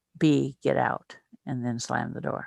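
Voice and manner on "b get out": put-on growl, louder, much slower. Retelling how the woman who opened the door growled at him, retelling a growl. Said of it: "she growled at me and said".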